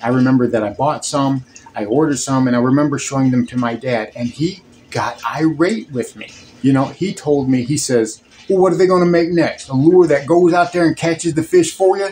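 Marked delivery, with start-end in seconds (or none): 8.5-12.1 put-on broad, thick Mississippi accent, quick and high. Quoting his irate dad's reaction to lures he ordered, in a thick Mississippi accent. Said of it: "as he said in his thick Mississippi accent".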